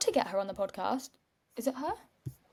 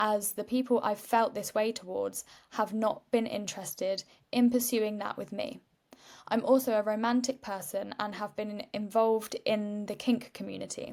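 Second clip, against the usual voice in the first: plain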